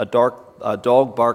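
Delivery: ordinary delivery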